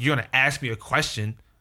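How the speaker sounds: normal talking voice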